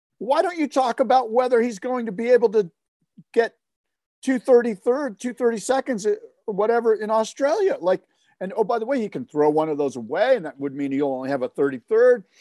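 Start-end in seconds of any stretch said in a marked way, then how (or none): 0.2-7.8 play-acted yelling, high, screaming rant. Retelling what was yelled at a TV broadcast: retelling screaming at the TV. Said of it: "screaming at the T V going".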